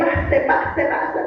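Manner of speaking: soft, breathless whisper with coaxing tone.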